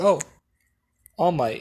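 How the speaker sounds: imitated flat dry tone. Retelling a character greeting all might: imitating a very dry tone. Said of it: "in the most, most dry tone".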